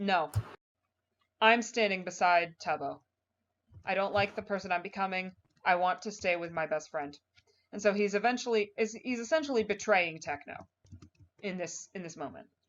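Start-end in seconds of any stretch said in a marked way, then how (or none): none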